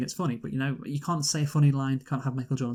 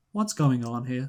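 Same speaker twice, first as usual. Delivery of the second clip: mock deadpan, flat, extremely calm. Retelling how a character reacts on landing in a cartoon world: mock-deadpan delivery. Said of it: "such a deadpan way".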